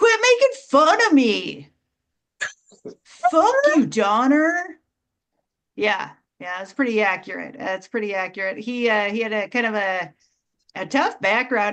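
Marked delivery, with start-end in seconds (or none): 0.0-4.8 drawn out, high and swooping. Performer doing a last impression for the audience: Rudolph the Red-Nosed Reindeer impression. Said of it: "Here's my impression of Rudolph the Red-Nosed Reindeer".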